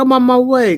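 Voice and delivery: put-on loud squealing girly voice.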